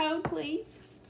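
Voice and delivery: put-on Southern drawl, pitched way up. Quoting a funny YouTuber's catchphrase, doing a Southern YouTuber impression. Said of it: "He's real Southern".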